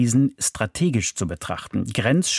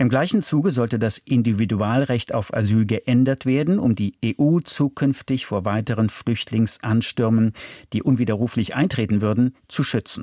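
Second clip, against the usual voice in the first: ordinary delivery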